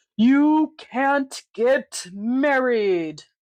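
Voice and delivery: spooky, scary, threatening, menacing storybook villain voice. A narrator reads the stink bug's line to the gathered friends, in a scary voice. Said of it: "said a scary voice".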